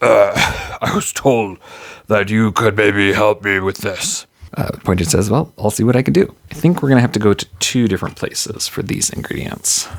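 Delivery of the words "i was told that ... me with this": low, deep, dropped put-on character voice. Storyteller voices a newly arrived character in the tale, in a deep character voice. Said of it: "she's got this deep voice now".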